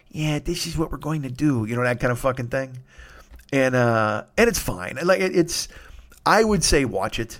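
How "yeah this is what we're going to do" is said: quiet, hushed wiseguy mob-boss voice, under the breath. Describing a quiet mob boss, imitating a mob boss half-whispering. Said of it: "whose voice never goes above a fucking whisper".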